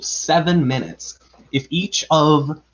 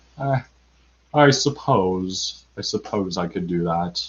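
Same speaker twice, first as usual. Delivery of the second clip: dejected robot voice, very low and deep; 7 semitones lower, 4 dB quieter than usual. Unsure the audience will get the reference, doing the sad robot from Hitchhiker's Guide. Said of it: "the sad robot from Hitchhiker's Guide".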